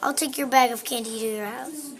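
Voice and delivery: ordinary talk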